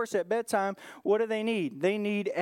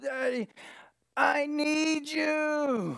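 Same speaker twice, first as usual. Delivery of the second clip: put-on half-asleep child voice, higher pitch; 6 semitones higher than usual. Retelling a daughter calling from upstairs at night: imitating a half-asleep child. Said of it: "just half tired, half asleep".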